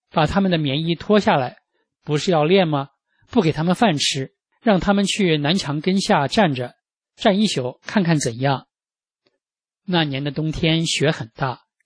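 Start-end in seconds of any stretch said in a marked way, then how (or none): none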